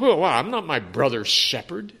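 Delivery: sarcastic delivery. Speaker retelling Genesis, acting out Cain answering the Lord, mimicking Cain's sarcastic reply. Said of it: "Being sarcastic".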